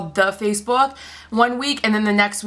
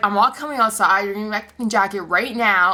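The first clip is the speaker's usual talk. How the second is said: ordinary talk, nothing marked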